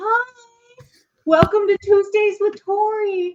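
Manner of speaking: very high, squeaky, silly dog voice, one word stretched. Speaker talks for the dog to welcome everyone: dog voice. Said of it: "I'll do it in my dog voice".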